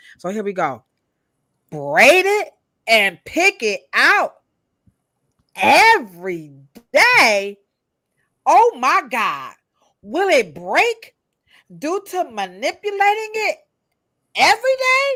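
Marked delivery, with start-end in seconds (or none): 1.7-15.2 loud, swooping, over-the-top put-on dramatic voice. Reading someone's question about braiding hair aloud: exaggerated, dramatic put-on delivery. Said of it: "I'm just going to exaggerate her question".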